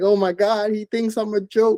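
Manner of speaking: acted-out crying. Retelling starting to cry after a son smiled: retelling own crying. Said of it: "And then I start crying".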